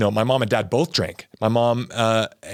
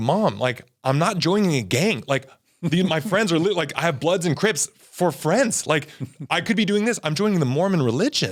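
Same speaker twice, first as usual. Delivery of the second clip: mad, exasperated, angry outburst with rising, raised pitch; 6 semitones higher than usual. Retelling arguing with mom about joining a church, retelling own angry words. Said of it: "I got mad".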